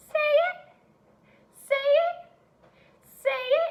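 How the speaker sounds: tiny, very high, squeaky mouse voice. Leading scholars in repeating the sight word, in a mouse voice. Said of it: "Say it in a mouse voice".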